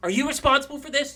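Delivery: very high, loud, frantic, freaking-out voice. Voicing a character accusing another player character in a moving van: freaking out. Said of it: "she's, like, freaking out".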